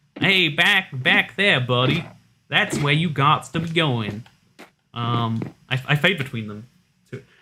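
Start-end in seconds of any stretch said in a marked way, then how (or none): 0.2-4.3 New York accent, placed forward in mouth. Comparing accents, the speaker demonstrates how a New Yorker talks: New York accent. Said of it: "a New York accent's a little more at the front of the mouth".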